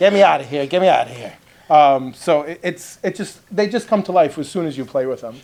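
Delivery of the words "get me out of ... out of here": put-on character voice with a Jersey accent. Voicing a toucan puppet for a viewer: Jersey accent. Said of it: "doing the Jersey accent with this guy".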